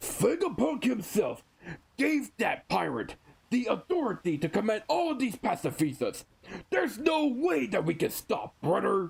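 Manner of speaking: swaggering tough biker voice. Retelling a Vice Admiral's line from the manga: Hulk Hogan voice. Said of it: "I just went Hulk Hogan there".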